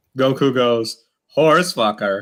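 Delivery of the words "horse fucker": put-on deadpan delivery with a Spanish accent.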